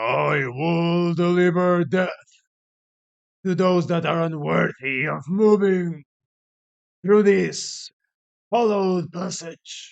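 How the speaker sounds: rough, gravelly voice of a stone statue. Narrating a fantasy game, voicing a warrior statue that speaks, gravelly statue voice. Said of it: "With a gravelly voice".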